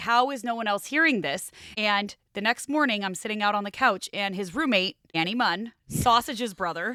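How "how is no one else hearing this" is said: usual speaking voice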